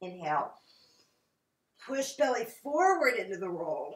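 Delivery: voice strained from effort. Cueing a breath and pose while lying on the roll: strained voice. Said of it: "You can hear that strains my voice".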